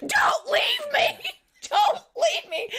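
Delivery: mock very high, stretched-out, drawn-out scream. Retelling a fall into a ditch while running: imitating Pam screaming. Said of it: "she's screaming".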